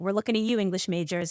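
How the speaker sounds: ordinary talk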